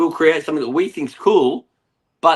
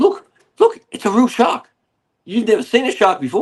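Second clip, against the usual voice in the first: put-on excited voice, higher; 6 semitones higher than usual. Retelling a dad showing his kid a shark: imitating an excited dad. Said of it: "And the dad's excited".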